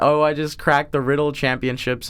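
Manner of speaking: ordinary delivery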